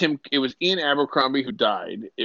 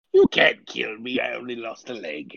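put-on pirate emperor character voice; 2 semitones lower than usual. Joking about a pirate version of the Emperor: Pirate Palpatine voice. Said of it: "your fusion character creation".

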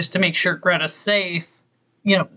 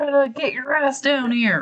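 mock scream, much higher; 7 semitones higher than usual. Recounting a story where a man calls Greta down, imitating a scream. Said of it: "And he starts screaming".

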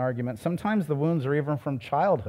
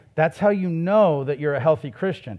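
ordinary talk

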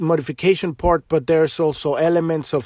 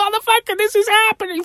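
very high, shrill, wild madman screaming. Recalling ranting on a Facebook soapbox, retelling screaming like a madman. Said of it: "screaming like a madman".

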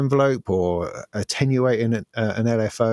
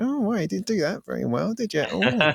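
wry, teasing, needling, critical tone, pitched up; 8 semitones higher, 4 dB quieter than usual. Retelling own past remarks on others' launches: imitating own past mocking criticism. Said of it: "I'm usually the person poking holes in it".

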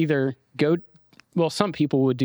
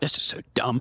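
mock grumbling, muttered under the breath; 4 dB quieter than usual. Imagining someone writing a silly list: imitating Nathan muttering under his breath. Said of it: "I can just hear Nathan muttering under his breath".

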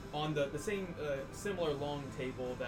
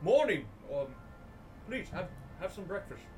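character voice, mouth full, much higher; 5 semitones higher, 3 dB louder than usual. As Jerry greeting the others at breakfast, talking with a mouthful. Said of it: "take a mouthful of eggs and go".

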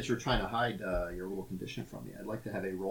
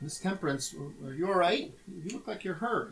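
put-on very high-pitched child's voice; 9 semitones higher, 3 dB louder than usual. Voicing a boy who asks a hurt companion if she's all right: kid voice. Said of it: "I gotta get my kid voice on".

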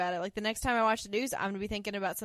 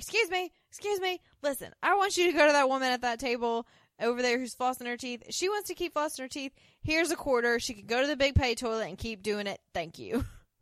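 play-acted, restrained, mildly raised calling voice; 4 semitones higher than usual. Retelling a woman calling out to the waiter, imitating a loud call to waiter. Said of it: "she calls out loudly to the waiter".

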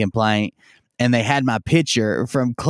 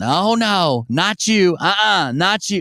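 high, drawn-out yell with put-on authority; 7 semitones higher than usual. Retelling how a worker at the counter reacted: imitating someone yelling. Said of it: "she immediately starts yelling".

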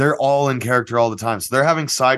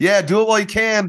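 put-on high, eager kid's voice. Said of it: "that kid's genuine response".

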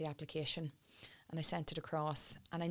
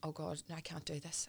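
reenacted crying, quieter; 5 dB quieter than usual. Recalling walking out alone in panic, retelling own past crying. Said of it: "standing in Manchester Street crying, going".

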